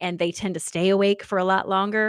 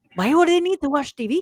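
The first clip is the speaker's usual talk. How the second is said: heavy, thick grandma dialect, pitched up; 8 semitones higher, 3 dB louder than usual. Retelling a conversation with grandma, quoting her: imitating grandma's thick accent. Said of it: "she had such a thick accent".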